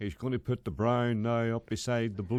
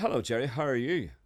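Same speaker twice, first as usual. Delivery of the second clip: la-di-da, upper-crust, posh swanky voice; 2 semitones higher than usual. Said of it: "Just go and say, "You be swanky."".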